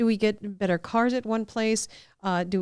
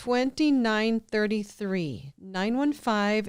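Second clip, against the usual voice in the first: slow, careful, deliberate delivery. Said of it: "You said that too fast".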